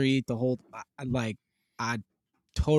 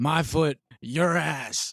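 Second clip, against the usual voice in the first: very slow, drawn-out, menacing voice; 2 semitones higher than usual. Quoting a favorite TV dad's catchphrase: Red Foreman impression. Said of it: "He go like".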